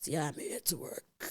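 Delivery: whispered, breathy, hushed, big spirit voice. Retelling a woman who, while praying, speaks in a big Madlozi voice. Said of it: "speaking in the Madlozi voice, like a big voice".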